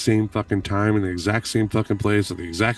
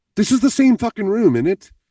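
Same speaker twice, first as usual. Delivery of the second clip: very high-pitched, panicked exclamation; 12 semitones higher, 5 dB louder than usual. Retelling calling friends to see the room, retelling own panic. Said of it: "I'm panicking".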